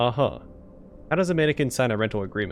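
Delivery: ordinary delivery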